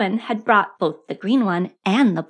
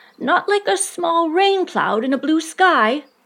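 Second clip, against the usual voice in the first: worried, uncertain, anxious, raised pitch; 8 semitones higher than usual. A bear holding onto a balloon asks the boy below: anxious. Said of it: "Pooh said anxiously".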